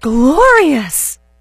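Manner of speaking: loud gasping exclamation. Retelling her daughter's reaction seconds later: imitating a loud gasping exclamation. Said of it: "she gasped and loudly said".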